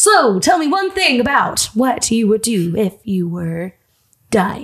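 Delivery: really cheesy, corny put-on host voice. Impersonating someone he used to imitate a lot: really cheesy voice. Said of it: "I like talk in a really cheesy voice like".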